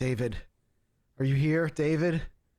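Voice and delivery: high, queasy, worried voice. Voicing a pale, sick-looking character calling at the gate: Liz, sick and concerned. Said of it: "pale, maybe even sick looking, and she's like".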